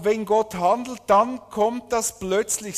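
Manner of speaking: emphasis on plötzlich and Gott.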